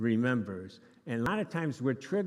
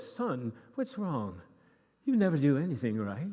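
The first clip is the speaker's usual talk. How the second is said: fake English accent kept up throughout. Contrasting how an angry dad really talks; mock English accent. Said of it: "in an English accent and go".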